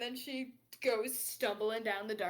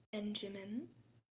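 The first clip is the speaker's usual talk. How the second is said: lowered, quieter tone; 8 dB quieter than usual. Voicing a character who leans toward Benjamin: lowered tone. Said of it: "she lowers her tone a little and kinda leans forward".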